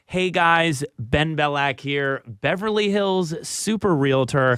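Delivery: slow, tongue-in-cheek sarcastic acted-out delivery. Retelling how a channel intro first came out: imitating own sarcastic intro. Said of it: "it just sarcastically came out of my mouth".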